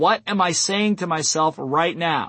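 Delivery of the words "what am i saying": ordinary delivery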